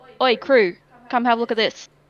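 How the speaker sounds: loud hollering, yelling out. Calling out to the crew along the dock: in-character yell. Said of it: "I'm just gonna yell out".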